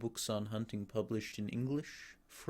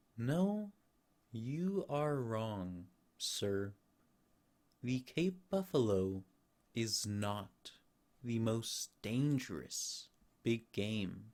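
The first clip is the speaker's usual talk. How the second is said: unhurried, slow, deliberate and measured tone. Narrator reads the general's reply to Rainford, said slowly. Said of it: "Then he said slowly".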